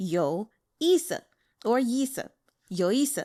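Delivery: yi and si both said with falling fourth tone. Teaching Mandarin pronunciation, demonstrating falling fourth tones. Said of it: "both yi and s are the fourth tone, so down".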